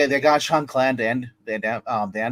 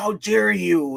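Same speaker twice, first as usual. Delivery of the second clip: high, pitched-up crazy villain voice; 7 semitones higher than usual. Retelling a movie scene where the villain is mocked: imitating Bison. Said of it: "He's like".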